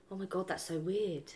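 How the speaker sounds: put-on calm tone. Acting out a boyfriend's reply to bad news: imitating a calm reply. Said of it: "really calmly".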